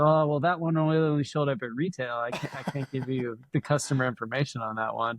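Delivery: ordinary delivery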